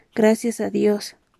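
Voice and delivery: ordinary delivery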